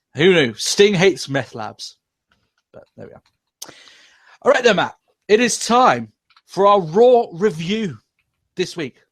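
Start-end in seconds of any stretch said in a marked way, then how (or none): 5.3-9.0 put-on halting dramatic voice, pitched higher. Announcing the start of the Raw review: William Shatner voice. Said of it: "I turn to William Shatner".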